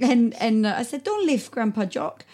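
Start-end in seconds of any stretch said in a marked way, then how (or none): 1.0-2.1 put-on light touch of a Greek accent. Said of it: "he's got a bit of a Greek accent".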